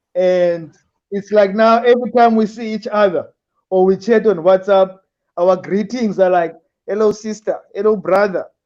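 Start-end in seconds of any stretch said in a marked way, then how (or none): none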